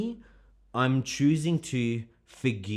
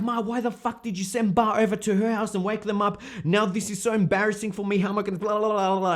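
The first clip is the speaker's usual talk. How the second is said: put-on furious angry rant, pitched up; 9 semitones higher, 3 dB louder than usual. Retelling calling her mother back about sending him over, retelling an angry call. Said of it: "And then I was really angry".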